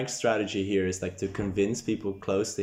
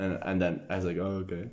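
ordinary talk, nothing marked

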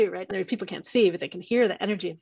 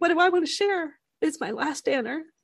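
welling up with tears, teary, pitched-up voice; 8 semitones higher than usual. Speaker describes imagining their last day on earth with a partner: getting teary. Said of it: "I'm getting all teary talking about it".

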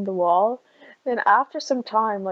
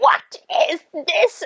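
high-pitched yelling, screaming; 9 semitones higher, 4 dB louder than usual. Speaker retells a woman pointing at the wall, retelling her screaming. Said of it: "she was like just screaming at everyone".

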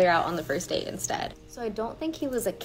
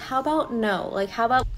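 usual speaking voice

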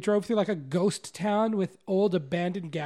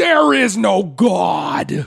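very loud, rough, full-throat screaming; 12 dB louder than usual. A podcast host acts out a guest's impression of Penn Jillette: screaming Penn Jillette impression. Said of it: "his impression of Penn is just him screaming".

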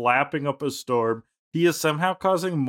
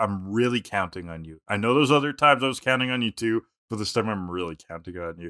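plain

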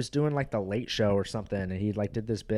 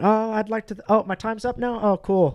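very high, raised, loud comic voice; 12 semitones higher, 7 dB louder than usual. Retelling a comedian's bit acting out winning an award: imitating Daniel Tosh's bit. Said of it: "runs up there and he's like".

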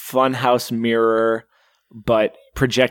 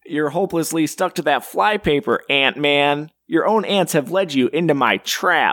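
put-on voice like a nerd; 4 semitones higher than usual. Retrying a line after being told it was just their regular voice, nerdy voice. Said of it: "like a goddamn nerd".

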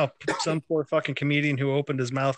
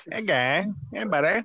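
cartoonish Canadian voice, higher; 6 semitones higher than usual. Joking around on a podcast, in a South Park Canadian voice. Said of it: "I was imitating the Canadian voice off of South Park".

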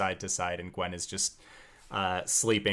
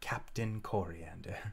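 muttering under the breath, quieter; 7 dB quieter than usual. Narrating the scene, voicing Corey on the ship's prow, muttering under her breath. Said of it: "muttering under her breath".

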